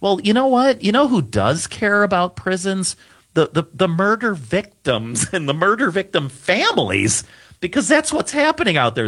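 high sarcastic tone.

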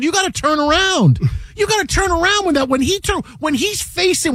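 yelling.

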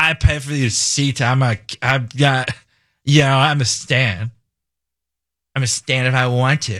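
haughty, snooty put-on voice, very slow and drawn out. Imitating a concert-goer who won't sit down: imitating a snooty person. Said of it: "You do a very good snooty person".

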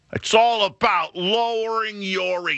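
very high and slow, earnest and totally convinced. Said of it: "with real conviction and like he's had enough".

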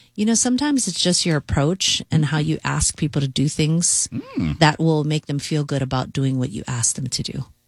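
put-on calm voice. Retelling their own reply to a guy, retelling saying it calmly. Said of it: "And then I calmly said".

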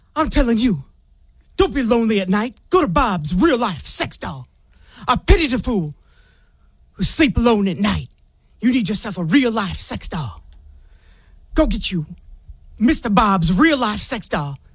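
mock gravelly tough-guy voice. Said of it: "she said it raspily".

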